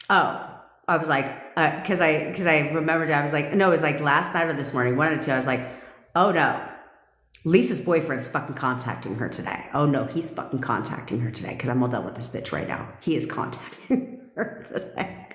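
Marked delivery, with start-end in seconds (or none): 6.1-15.3 put-on exasperated, annoyed, fed-up, done-with-it venting. Retelling own thoughts from this morning: retelling own annoyed words. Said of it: "I was just so annoyed".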